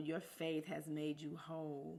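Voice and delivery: normal talking voice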